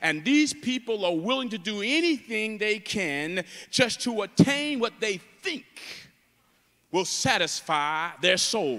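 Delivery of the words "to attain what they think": think stressed hard and pitched higher. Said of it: "I emphasize the word think".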